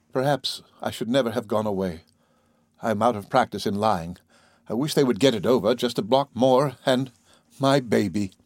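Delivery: ordinary delivery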